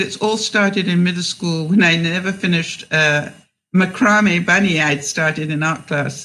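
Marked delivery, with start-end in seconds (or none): none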